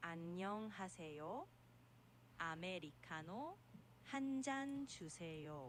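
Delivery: very slow, clear, distinct speech. Showing a beginner how to say an order: very slow, clear speech. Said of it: "그럼 정말 천천히 말해볼게요".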